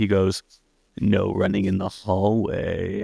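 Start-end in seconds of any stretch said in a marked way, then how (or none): 1.0-3.0 slow, drawn-out, rough creepy voice. Retelling a movie scene where the villain warns the heroine: Freddy Krueger voice. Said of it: "And in Freddy's voice".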